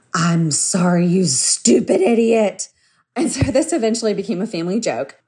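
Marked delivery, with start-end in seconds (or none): 0.1-2.6 put-on gritted-teeth yell, much slower. Retelling a boy's forced apology to his sister, yelled through gritted teeth. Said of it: "through gritted teeth, yell".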